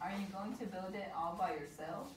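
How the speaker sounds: normal talking voice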